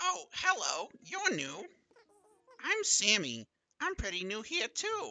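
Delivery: very loud, high, slow, swooping cartoon-cat voice. Voicing the villager Sammy greeting a newcomer: Meowth voice. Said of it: "a Meowth voice last time".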